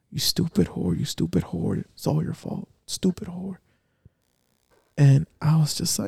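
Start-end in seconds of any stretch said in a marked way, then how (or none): 0.2-3.6 put-on breathy whisper, harsh and abusive. Retelling the cussing she kept hearing while in pain: imitating the cussing she heard. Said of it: "the cussing I I kept hearing".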